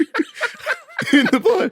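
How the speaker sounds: high, loud, choked-up laughing mock sob.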